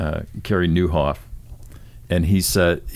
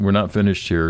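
ordinary talk

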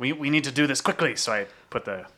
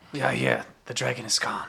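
hushed half-whisper, under the breath; 3 semitones lower, 4 dB quieter than usual. Speaking in character to a genie in a lamp: half-whispering. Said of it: "pulls out the lamp and whispers".

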